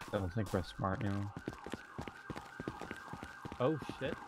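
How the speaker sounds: very soft, hushed, sneaking whisper. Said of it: "Make sure you're on Whisper".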